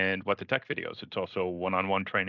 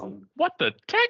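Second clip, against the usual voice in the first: bad imitation of another speaker, higher and louder; 5 dB louder than usual. Imitating a phrase the previous speaker says: horrible impression of another speaker. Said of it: "a horrible impression".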